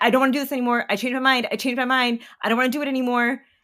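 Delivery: acted, high-pitched, frantic screaming over and over. Recounting giving birth, reenacting screaming to the anesthesiologist: retelling a scream. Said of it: "At one point I was screaming to the anesthesiologist".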